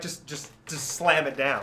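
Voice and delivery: ordinary talk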